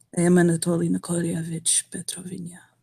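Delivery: almost too soft to hear. Narrating a scene, voicing a man introducing himself: almost too soft to hear. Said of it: "he'll softly say, almost too soft to hear".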